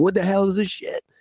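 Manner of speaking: mock exasperated, angry outburst, very high-pitched yell. Retelling own reaction to a video game: imitating own yelling at the tv. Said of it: "I'm sitting yelling at the T V like".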